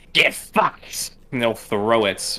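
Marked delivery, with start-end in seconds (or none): 0.2-1.1 piercing, thin, shrill shriek. Storyteller voices a tiny marble screaming as it is thrown, shrill scream. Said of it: "screams out in a shrill voice".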